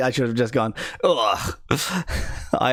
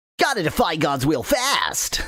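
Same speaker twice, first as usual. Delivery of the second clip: put-on nasal character voice; 3 semitones higher than usual. Going through voices that don't hurt the throat, doing the Sonic voice. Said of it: "That's a very nasal voice".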